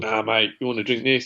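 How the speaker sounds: put-on Cockney accent. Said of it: "I don't know why they all go Cockney".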